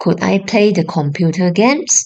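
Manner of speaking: ordinary talk, nothing marked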